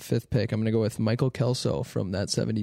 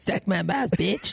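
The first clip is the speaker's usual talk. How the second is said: high, rough cartoon brat child voice; 8 semitones higher than usual. Asked by the other speaker to say Jesse Pinkman's line in Cartman voice. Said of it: "Say it with Cartman voice".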